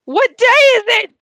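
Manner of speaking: very high, loud yell. Speaker retells Scrooge calling out the window to the bunny, Scrooge yelling out the window. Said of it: "He like yells out the window".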